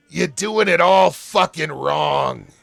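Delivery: loud, rough, rasping voice. Voicing a character who croaks out a laugh, then speaks: raspy voice. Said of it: "you hear a raspy and familiar voice".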